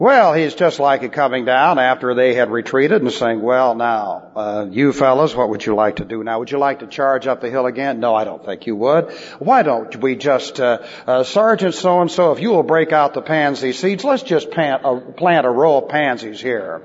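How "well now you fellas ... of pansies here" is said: sarcastic, mock-polite tone. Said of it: "Now that's sarcasm".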